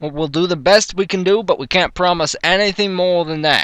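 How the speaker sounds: attempted Texan accent that comes out sounding New York. Trying a Texan accent for a character role: attempted Texan accent, sounds New York. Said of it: "That's that sounds more like New York accent".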